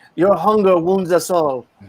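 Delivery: put-on French accent. Discussing how the comic's creators intended him, doing a Silver Surfer French accent. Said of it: "I can only read Surfer with a French accent".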